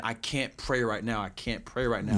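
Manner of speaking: ordinary delivery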